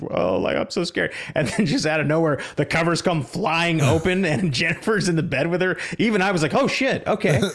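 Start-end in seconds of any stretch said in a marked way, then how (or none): 0.1-1.1 put-on weepy teenage voice, crying and sobbing. Retelling a story about a girl lying in her bed, imitating her crying and sobbing. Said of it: "like crying and sobbing like a teenager".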